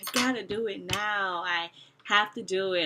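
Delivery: mock urgent, panicky, drawn-out insistence. Retelling a missed dilation in the first month, imitating own panic. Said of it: "I'm panicking".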